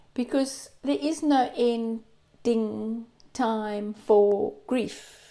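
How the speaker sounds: unhurried delivery. Speaker addressing viewers, said slowly. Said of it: "And I said that slowly".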